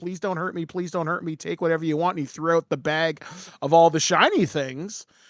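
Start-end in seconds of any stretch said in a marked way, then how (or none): 0.0-2.2 put-on begging troll voice, quieter. Retelling how a troll locked in his home begged the players: imitating a begging troll. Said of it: "he begged for his life".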